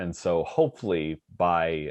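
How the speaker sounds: ordinary delivery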